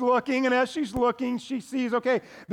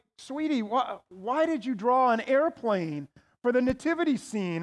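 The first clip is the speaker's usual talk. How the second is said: ordinary talk, nothing marked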